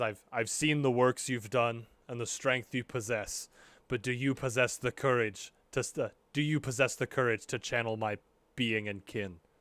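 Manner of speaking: put-on low, deep rumbling bear voice. Voicing a talking bear that challenges a player, in a low rumbling bear voice. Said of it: "a low like rumbling voice".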